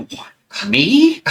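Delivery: rattled, shaken, very high, startled, disbelieving squeak. Retelling being picked out to read in a meeting: imitating own shaken reply.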